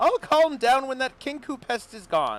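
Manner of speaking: very high-pitched, shrill, loud, swooping squawk. Narrator reads Mister Light's reply to Mister Witch, in his high shrill voice. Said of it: "replies in a high-pitched, shrill voice".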